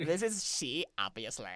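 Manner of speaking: put-on Southern California Valley Girl accent and voice. Playing Julie after a suggestion to try it, in a Valley Girl accent. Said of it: "You can do a Valley Girl accent with it".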